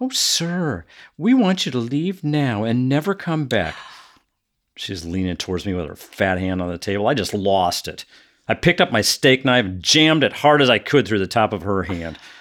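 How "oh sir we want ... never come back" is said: put-on politeness, falsely courteous, pitched up. Retelling how she told him to leave, mimicking her phony polite tone. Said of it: "said in a phony, polite tone".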